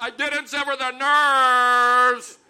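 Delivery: slow, very loud, defensive yelling. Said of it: "I yelled into her".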